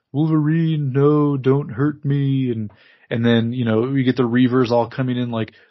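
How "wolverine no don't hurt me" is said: slow, drawn-out, weird, spooky, ghostly drifting voice. Retelling a cartoon scene where a head talks to Wolverine: imitating Jubilee's phantasmic voice. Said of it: "talk to the characters in, like, a really phantasmic sort of way".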